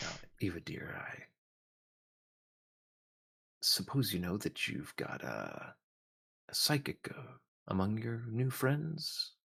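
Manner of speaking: quiet, low, hushed aside. Narrating a father taking Eva aside out of everyone's earshot, in a low voice. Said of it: "he'll say in a low voice".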